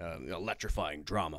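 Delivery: over-serious trailer narrator voice.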